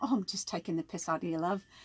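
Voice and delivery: soft, bad put-on English accent. Quoting what her british ex-husband used to say, in a bad british accent. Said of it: "that was a bad accent".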